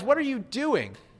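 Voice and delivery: surprised, startled, high-pitched outburst. Waking to find John brushing the narrator's shoes, the narrator asks him: exclaiming in surprise. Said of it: "I exclaimed, full of surprise".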